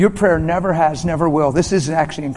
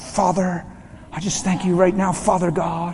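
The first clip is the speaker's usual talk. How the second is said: put-on pious, churchy, spiritual praying tone; 2 semitones higher than usual. Talking about praying for the sick, showing how people sound: put-on spiritual prayer voice. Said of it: "We even put on our spiritual voice".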